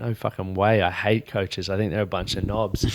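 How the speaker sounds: ordinary talk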